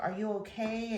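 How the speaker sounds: high, called-out yell. Retelling how a neighbor called downstairs: imitating someone yelling. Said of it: "So I guess Eva yells".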